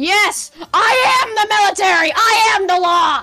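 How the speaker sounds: worked-up, over-the-top, very loud, very high yelling. Told that what he is doing is illegal, a man claims authority, agitated shouting. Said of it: "you can calm down".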